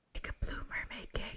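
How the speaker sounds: soft, breathy, very hushed whisper. During a quiz, the speaker passes the answer to another player, whispering. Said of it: "I'm whispering to you".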